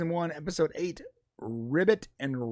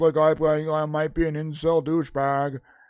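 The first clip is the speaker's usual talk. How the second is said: loud, fake, artificially deepened voice; 5 dB louder than usual. Speaker demonstrating how the artificially lowered voice sounds. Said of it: "it sort of sounds like this".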